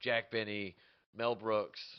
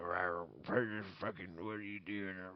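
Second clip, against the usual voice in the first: put-on cranky old man voice, quieter; 6 dB quieter than usual. Showing how they play a character when caught: put-on ornery old man voice. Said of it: "an ornery old man or something".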